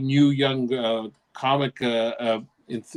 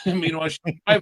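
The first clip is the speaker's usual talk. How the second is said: ordinary talk, nothing marked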